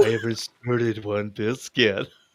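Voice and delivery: put-on sexy, seductive voice. Reading a chat message aloud as asked: sexy pants voice like Price doing Atom.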